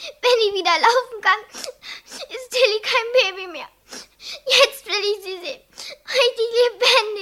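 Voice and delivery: loud, high-pitched, weeping speech. A child in hospital, told to stop crying, answers while crying. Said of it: "hör auf zu weinen".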